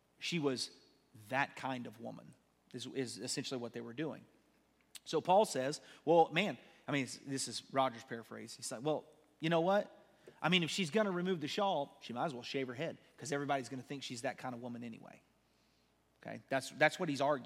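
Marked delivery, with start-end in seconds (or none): none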